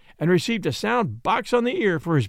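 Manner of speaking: plain reading voice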